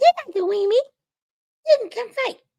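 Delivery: tiny tough-guy voice, very high pitched. A speaker points out a little guy over there, imitating a high voice. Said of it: "Voice all high and everything".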